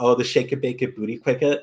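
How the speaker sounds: embarrassed delivery with mock laughing through it. Retelling meeting Kari Wahlgren at a convention, imitating her embarrassed laughing. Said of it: "the way she said it and laughed".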